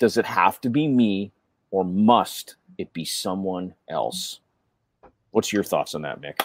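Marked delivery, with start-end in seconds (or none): 1.7-4.4 "must" stressed, spoken slow and low. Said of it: "when you ask that with the emphasis on".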